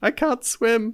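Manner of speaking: very small, very high voice. Retelling a pirate falling in the water at the fight's end: very small voice. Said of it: "in a very small voice is like".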